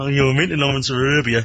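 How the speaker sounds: plain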